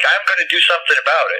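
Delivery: really mad, fuming, fed-up outburst. Retelling what a fellow wrestler said at the airport: imitating someone really mad. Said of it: "he was really mad, like".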